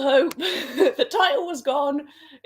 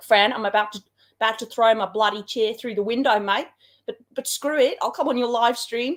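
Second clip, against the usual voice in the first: best-attempt put-on Australian accent; 3 semitones lower than usual. Acting out Steve's reply to a message; imitating Steve's Australian accent. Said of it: "I'm going to try my best accent".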